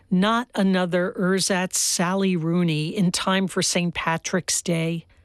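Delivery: normal talking voice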